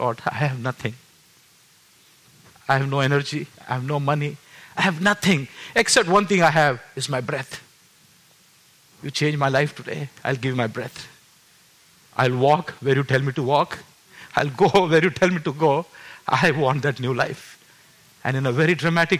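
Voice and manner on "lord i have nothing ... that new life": weeping, tearful, crying, pleading voice. Retelling a prayer made while crying in the car: retelling a tearful prayer. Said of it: "I started crying".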